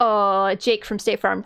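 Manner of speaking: put-on cagey, shifty, suspicious-sounding voice. Retelling a commercial where the husband answers his wife: imitating a suspicious-sounding husband. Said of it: "the husband acted so fucking sus".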